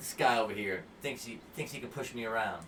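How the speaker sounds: usual speaking voice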